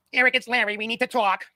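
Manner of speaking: put-on East Coast accent. Acting out the landlord knocking at Eric's door, in Larry's East Coast accent. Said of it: "This with this East Coast accent".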